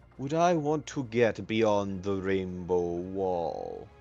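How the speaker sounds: hushed voice. Voicing a character leaning down to speak only to Zormir: quieter, less carrying voice. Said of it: "in a not quite as carrying voice".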